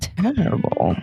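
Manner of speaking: true-crime documentary voiceover narrator read. In a game of saying one word in different styles, true crime documentary narrator. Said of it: "True crime doc".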